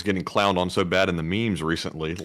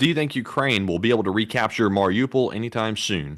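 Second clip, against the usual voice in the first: ordinary talk, nothing marked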